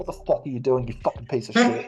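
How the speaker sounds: mock, pretend whispering. Joking about what the comparison meerkat whispered to him: mock whisper. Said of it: "whispered in my ear and just said".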